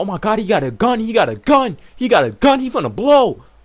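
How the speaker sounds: high yelled-out voice. Retelling what everybody at the party shouted: imitating people yelling. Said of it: "everybody's sitting there yelling out".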